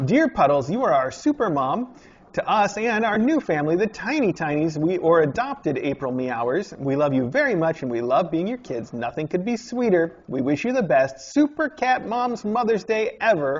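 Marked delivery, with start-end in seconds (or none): 10.3-13.6 strange, off-kilter, weird intonation. Reading a Mother's Day card aloud, with a weird inflection. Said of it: "I read that with a weird inflection".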